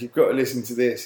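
normal talking voice

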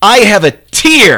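put-on very high, very loud, accusing toddler-like cry. Retelling how his three-year-old complained about one tiny tear: imitating an accusatory toddler. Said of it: "in just the most accusatory voice".

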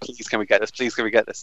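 put-on childlike begging, pleading tone. Speaker recalls being seven and wanting an Atari, retelling childhood begging. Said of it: "I begged my".

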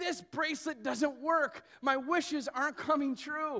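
put-on high, angry child voice. Telling a story, the speaker quotes their daughter's complaint, imitating angry Eden. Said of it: "you could tell she was so angry".

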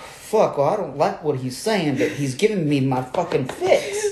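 swooping Georgia Southern US accent slipping in. Voicing a quoted thought and slipping unintentionally into a southern accent. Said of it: "I don't mean to do it in a southern accent".

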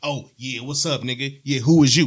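acted-out, challenging, aggressive, in-your-face delivery. Acting out a hypothetical hostile greeting he says he would not use: imitating a confrontational approach.

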